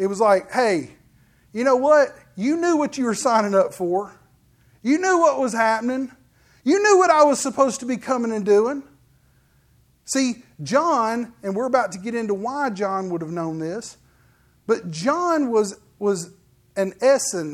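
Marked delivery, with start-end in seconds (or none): 0.5-8.8 sarcastic, pointed, mildly cutting put-on tone. Acting out Jesus answering a questioner: imitating Jesus sarcastically. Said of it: "sort of like a slight back to John".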